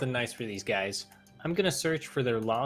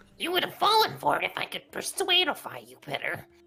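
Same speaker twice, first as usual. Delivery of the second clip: put-on goblin voice, much higher pitch; 9 semitones higher, 3 dB louder than usual. Answering someone who refuses to fall for the trick again, in a vaguely Gollum-like goblin voice. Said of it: "Why do you sound vaguely Gollum-esque?".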